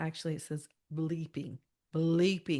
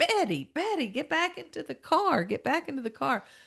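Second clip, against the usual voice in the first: very high, panicked, frantic screaming; 10 semitones higher, 4 dB louder than usual. Retelling how a woman screamed out the car door to Betty, imitating a woman screaming. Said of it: "she's screaming out the door".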